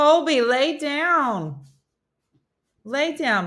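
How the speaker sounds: loud calling shout. Calling a dog that cannot hear to lie down: yelling to a deaf dog. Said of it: "I'm yelling".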